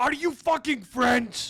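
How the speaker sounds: mock-angry shouting. Retelling how a man approached their group, the speaker acts out his angry shout. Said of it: "shouted at us with an angry voice".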